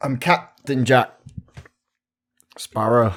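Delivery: big, loud character announcing voice. Answering a request to do an impression: Jack Sparrow impression. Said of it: "I want to hear your best impression of Jack Sparrow".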